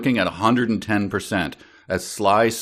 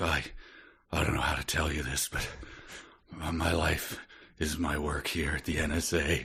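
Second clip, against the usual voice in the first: very hushed, quiet, feeble, frail voice; 5 semitones lower, 12 dB quieter than usual. Acting out a book character's confession: imitating a frail voice. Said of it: "his voice is frail".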